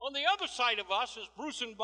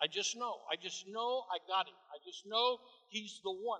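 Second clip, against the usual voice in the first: ordinary talk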